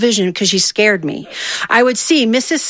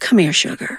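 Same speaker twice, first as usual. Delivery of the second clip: gentle, soft calling voice; 3 semitones lower than usual. Retelling how a teacher called a misbehaving pupil forward: imitating a gentle call. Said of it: "she would gently call us to the front".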